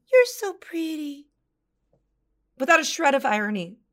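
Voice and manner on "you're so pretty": high, loud voice like talking to a pet dog. Retelling praising a watered houseplant: imitating voice for talking to a dog. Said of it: "in the same voice that I talked to my dog".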